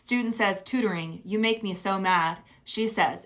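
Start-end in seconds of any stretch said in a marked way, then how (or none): none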